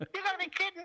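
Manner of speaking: very high-pitched voice. Retelling what a player said to the referee: high-pitched Steve Roach voice. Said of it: "'cause Steve had a very high voice".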